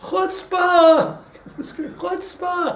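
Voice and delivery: very high, loud, outraged screaming. Retelling how a man screamed at the Kaiser, retelling a scream. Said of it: "screaming, literally".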